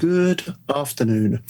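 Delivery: deliberately slow, drawn-out speech. A father showing how he greets his upset kids, speaking slowly. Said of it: "I just start speaking slowly".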